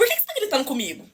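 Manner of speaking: ordinary talk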